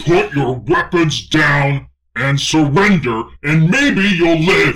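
roaring creature scream. In a roleplaying game, trying to intimidate enemies into surrender, in a roaring Krogan voice, screaming. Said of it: "scream in the most roaring Krogan voice I can".

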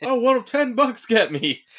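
mock shrill yell, very high, loud, drawn out. Retelling a movie scene, imitating someone yelling. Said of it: "and she starts yelling".

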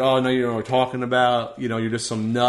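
ordinary delivery

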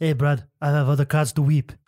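put-on, fake French accent. Trying out the line like a Frenchman: put-on French accent. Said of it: "you gotta say it like a Frenchman".

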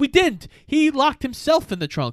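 defensive tone.

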